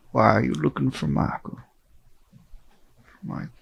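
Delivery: put-on rough-edged, creaky, raspy old man voice. Voicing a character asking why they look for Michael: sounds like Colonel Sanders. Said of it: "Sound like Colonel Sanders".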